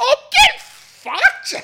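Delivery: very high, very loud, swooping shrill blurt. Retelling own reaction to a blank canvas in an art gallery: retelling a loud outburst. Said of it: "I made sure I said it quite loudly too".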